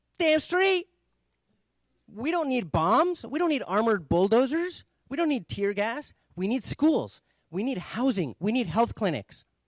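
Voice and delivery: high, loud, angry demanding rant. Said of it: "The guy's like".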